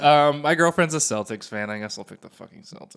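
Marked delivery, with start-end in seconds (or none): 1.7-3.0 very quiet, grudging, resigned, unhappy mutter. Picking a playoff team to root for: unhappy. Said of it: "You don't sound happy about it".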